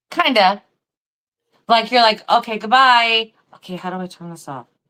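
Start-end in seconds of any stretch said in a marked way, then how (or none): 2.3-4.7 self-directed, thinking out loud. Imitating someone on a recording talking to themselves: imitating quiet talking to oneself. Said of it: "so you're real quiet when you're saying it".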